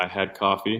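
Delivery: flat, level monotone with no lift, uninflected. Acting out a coffee chat, answering in a monotone: imitating Chris Taylor's monotone. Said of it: "That's how monotone he is".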